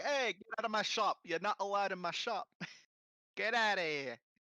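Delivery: put-on New York Italian accent. Joking about racist fish, the speaker plays a New York racist, New York Italian accent. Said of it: "the New York racists where they're like Italian".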